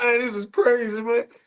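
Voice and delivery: very high, frustrated, tearful angry crying. Retelling being ganged up on, imitating own angry crying. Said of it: "I'm so angry. I'm crying".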